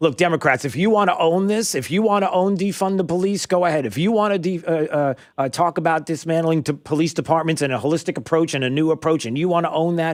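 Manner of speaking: playful, half-joking. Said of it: "I would half jokingly say".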